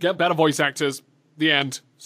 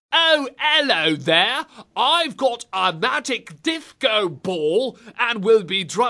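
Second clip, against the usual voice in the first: rubbish fake British accent; 5 semitones higher than usual. Mocking a game character's voice: rubbish British accent. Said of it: "what a rubbish British accent".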